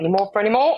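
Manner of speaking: put-on borrowed English accent. Repeating the other speaker's phrase back, imitating an English accent. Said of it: "you've done my English accent".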